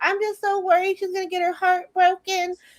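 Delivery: very high, weepy, tearful sobbing speech. Retelling a scene where a character is still crying: imitating someone crying. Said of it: "Nina's still crying".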